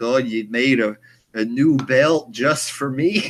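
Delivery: loud, goofy, hammed-up put-on wrestler voice. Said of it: "Just in the goofball fashion".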